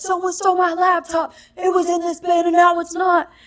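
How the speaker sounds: mock shrill, very high-pitched screaming outburst. Retelling a man at security shouting about his laptop: imitating a man screaming. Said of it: "this guy's like".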